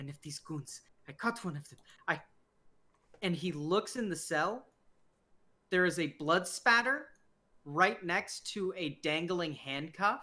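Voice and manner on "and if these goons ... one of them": quick, soft, mumbled mutter. Narrating a man leading you through a corridor of jail cells, muttering to himself. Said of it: "he kind of mutters to himself".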